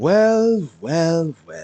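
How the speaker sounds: condescending. Confronting two escapees from a prison, condescending. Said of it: "That condescending tone".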